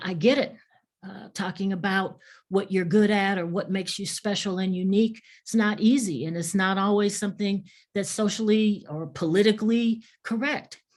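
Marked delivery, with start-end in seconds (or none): none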